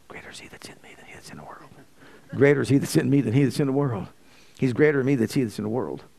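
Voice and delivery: quiet mutter under the breath. Retelling a man repeating a verse while smoke is blown in his face: imitating muttering under his breath. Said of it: "And under his breath".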